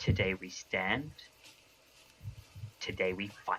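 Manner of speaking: hushed, quiet whisper. A player voices her character leaning into his ear, whispering. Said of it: "she's gonna whisper into his ear".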